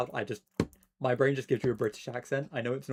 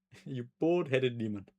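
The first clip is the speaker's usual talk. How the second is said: atrocious put-on Nigerian accent. Asked to try an accent, offering the most atrocious Nigerian accent. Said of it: "I'm gonna give you the most atrocious Nigerian accent".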